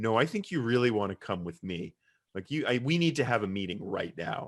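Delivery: ordinary delivery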